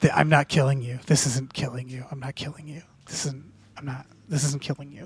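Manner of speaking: low, very soft, barely audible half-whisper under breath. Speaker acting out what they repeat to themselves during a fight, half-whispering. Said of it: "the whole time I'm whispering".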